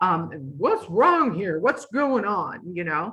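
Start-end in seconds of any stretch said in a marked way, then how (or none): 0.6-2.7 put-on big voice, toned down and mild. Retelling how she'd walk in on preschoolers acting out: imitating a booming voice. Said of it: "she had this booming voice".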